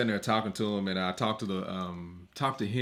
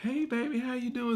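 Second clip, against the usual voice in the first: put-on cute voice, pitched much higher; 4 semitones higher than usual. Retelling how Side talks to Amar: imitating Side's cute voice. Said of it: "he does his little cute voice".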